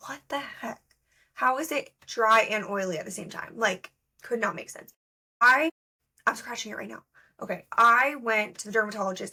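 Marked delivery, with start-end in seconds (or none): none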